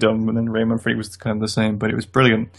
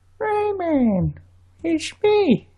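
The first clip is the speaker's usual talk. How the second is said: put-on lovable cartoon voice, higher. Trying to get a game character's voice, calling to Rayman: Globox voice. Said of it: "I'm trying to get the voice".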